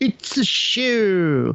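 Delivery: high, slow, drawn-out mock scream.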